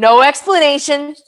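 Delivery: normal talking voice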